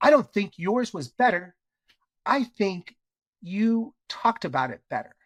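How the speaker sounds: play-acted super aggressive tone. Retelling what a woman said right to the speaker's face, in a mock-aggressive tone. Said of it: "Super aggressive tone".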